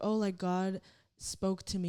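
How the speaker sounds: ordinary talk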